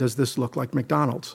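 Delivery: quiet, deadpan, dead serious tone, acted. Retelling a man's reply to the speaker in front of the speaker's parents: retelling a dead-serious line. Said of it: "in a dead serious tone said".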